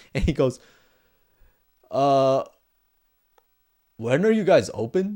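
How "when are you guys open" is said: put-on drunken speech. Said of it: "He walks up hella drunk".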